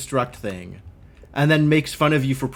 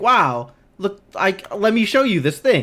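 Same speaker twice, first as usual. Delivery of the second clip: high, eager, excitable and friendly narrator voice; 6 semitones higher than usual. Imitating the game's narrator showing off something: imitating an excitable, friendly narrator. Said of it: "the excitable, friendly narrator who's just like".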